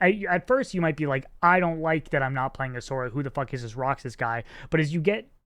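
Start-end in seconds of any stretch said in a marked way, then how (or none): none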